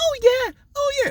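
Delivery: very high, whining voice without nasal quality. Describing someone who used to have a really whiny voice; imitating a whiny voice. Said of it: "a really whiny voice".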